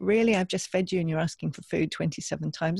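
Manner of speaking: plain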